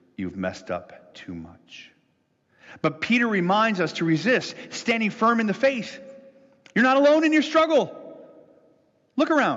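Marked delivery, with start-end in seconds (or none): 0.2-2.0 hushed, very low, slow half-whisper. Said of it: "Something whispers".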